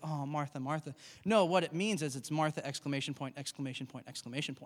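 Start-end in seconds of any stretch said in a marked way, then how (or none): 0.0-0.9 soft, gentle, kindly tone. Showing how the translation makes Jesus's words sound: kind gentle tone. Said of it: "This isn't this kind little".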